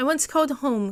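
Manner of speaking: ordinary delivery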